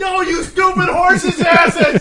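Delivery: mock shrill, very high, drawn-out scolding scream. Retelling how a spouse reacts to a tv show: imitating someone screaming. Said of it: "she's sitting here screaming at the television".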